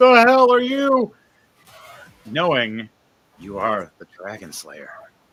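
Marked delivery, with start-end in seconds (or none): 0.0-1.1 very high, very loud, shrill, panicked screech. Narrator voices the creature reacting to the player's smirk, screeching and freaking out. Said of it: "it just screeches, freaking out".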